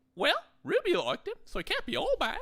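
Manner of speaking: very high-pitched, bad New Zealand accent. Recapping an episode, voicing Omega's reply to Hunter: Omega in a bad New Zealand accent. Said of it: "a terrible New Zealand accent".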